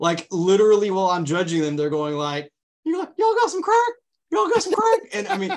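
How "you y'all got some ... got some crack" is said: very high, begging, over-the-top comedic addict voice. Retelling how racers talked while being judged: Tyrone Biggums voice. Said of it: "they were talking like Tyrone Biggums".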